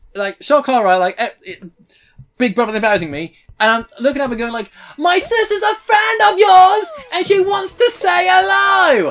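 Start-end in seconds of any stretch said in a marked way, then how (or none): 4.9-9.1 very high, stretched-out calling. Retelling calling up to a performer above the crowd: imitating shouting up at someone. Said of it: "shouting at each other".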